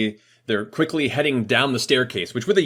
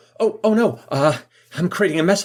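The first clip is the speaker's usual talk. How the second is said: flustered robot voice, panicked, hurried, pitched higher; 6 semitones higher than usual. Voicing a robot who dropped something and hurries: flustered robot. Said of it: "quickly go".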